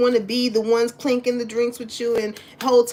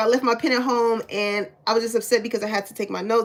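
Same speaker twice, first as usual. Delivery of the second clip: normal talking voice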